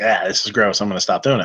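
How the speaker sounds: plain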